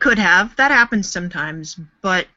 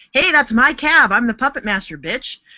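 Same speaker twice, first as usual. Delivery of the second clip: put-on bossy, high, intimidating half-yell; 6 semitones higher than usual. Retelling how another contestant yelled to take the cab: imitating Joey yelling. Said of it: "He yelled at them".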